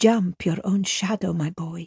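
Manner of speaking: softly whispered. Narrator reads the father's remembered words to his boy: whispering. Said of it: "he whispers".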